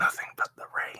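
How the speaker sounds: soft unvoiced whisper.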